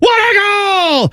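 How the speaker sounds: ecstatic, excited scream, very high pitch. Mocking a man heard while driving around Columbus, imitating an excited scream. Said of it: "he'd be screaming and he's like".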